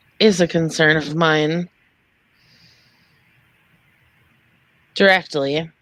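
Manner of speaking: hushed, quiet tone. Voicing a character who scans the room as she speaks, hushed tone. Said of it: "she says that like in a hushed tone".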